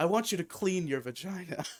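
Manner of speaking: put-on stoic character delivery. Quote the character's line to the hooker in the tub, with a stoic Patrick Bateman delivery. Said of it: "in like the most like stoic delivery possible".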